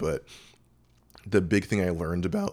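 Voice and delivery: breaking, cracking voice, cracking mid-line. Speaker telling a personal story: voice cracking. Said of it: "voice crack there".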